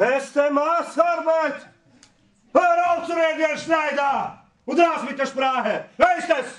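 shouting. Losing patience with herr schneider during a back-and-forth: shouting. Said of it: "Bitte schrei nicht so mit mir".

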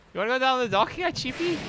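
very high put-on Scouse accent, Liverpool. Comparing regional British accents, the speaker turns to Liverpool: imitating a Liverpool accent. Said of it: "What about Liverpool?".

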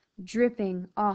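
ordinary delivery, nothing marked

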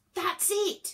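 crying out, very high-pitched, exclaiming. Reading Elliot's line as he leans out of the window: cried out. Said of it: "cried Elliot".

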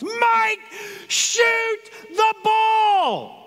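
very high, very slow, stretched-out scream. Recalling a game's final seconds, speaker reenacts screaming at Mike: retelling a top-of-lungs scream. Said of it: "I'm screaming at the top of my lungs".

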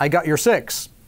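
normal talking voice

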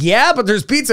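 mock cheer, said high and bright.

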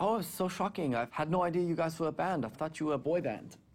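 put-on heavy German accent. Retelling a startled German disc jockey meeting the band, thick German accent. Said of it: "in a thick German accent".

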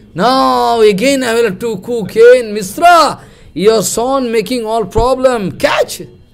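high, loud, exasperated tone.

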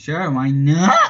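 voice cracking mid-phrase. Answering an invitation to play again: voice cracking. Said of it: "Voice crack".

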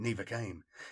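ordinary delivery

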